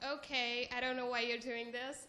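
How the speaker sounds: mock, very sarcastic, dismissive tone. Retelling the first person's reply to a hug request: imitating a sarcastic reply. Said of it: "very sarcastic".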